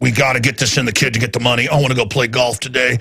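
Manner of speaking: low, fast, mocking official voice. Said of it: "He's just like".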